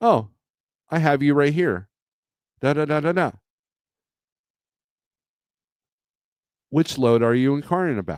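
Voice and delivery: pleasant, lovely woman's voice like automated AI agent. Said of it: "this lovely woman's voice".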